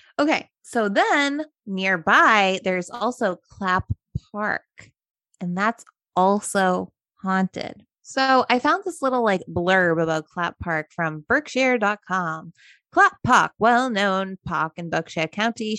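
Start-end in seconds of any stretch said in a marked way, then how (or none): 12.9-15.8 put-on old-fashioned British accent, reading voice. Reading a clapp park blurb from berkshire.com in a put-on british accent. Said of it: "Why do we have a British accent now? ... it's just like an old-timey accent".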